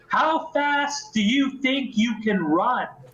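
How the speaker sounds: booming monster bellow. Voicing a monster calling out over Arcadia to five players: booming, monstrous bellow. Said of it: "I bellow to the air of Arcadia".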